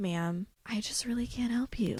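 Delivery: mock frustrated, quiet voice. Retelling a coworker's words to a caller: imitating someone quiet and frustrated. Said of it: "he used to get really quiet when he got frustrated".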